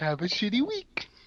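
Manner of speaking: pitch rising on "week" at the end. Mimicking how another speaker says a phrase, imitating upward inflection on week. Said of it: "an upward inflection on week".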